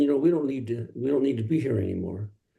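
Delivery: normal talking voice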